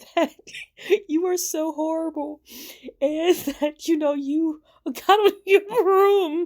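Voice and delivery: very high voice, words breaking into laughter. Speaker describing a smear campaign apologizes mid-sentence, laughing while talking. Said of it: "I'm sorry, I'm laughing".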